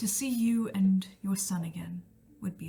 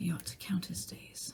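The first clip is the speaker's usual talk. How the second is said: very quiet, whispered, under-the-breath mutter; 9 dB quieter than usual. A player's character, about to walk off, speaks so only one other can hear: muttered under her breath. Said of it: "Under her breath".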